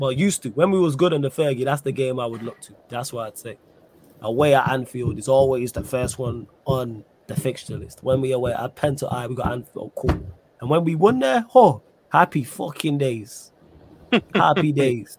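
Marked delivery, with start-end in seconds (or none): 12.1-15.2 thick, strong Manchester accent. Recalling winning away at Anfield, with a strong Manchester accent. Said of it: "You hear the Manc accent come out".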